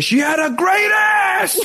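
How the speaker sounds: impression voice, sudden very high yell out of nowhere. Quoting a line from the film Heat: Al Pacino impression. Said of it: "as Al Pacino would say".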